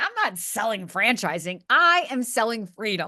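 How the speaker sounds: ordinary delivery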